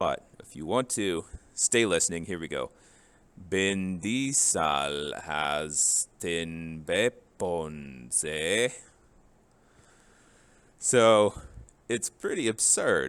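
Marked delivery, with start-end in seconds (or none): 3.5-8.7 very slow, exaggerated put-on Spanish-German accent. Here we go: a line in a put-on Spanishy, German-Canadian accent. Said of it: "sort of a Spanishy, almost German slash Canadian accent".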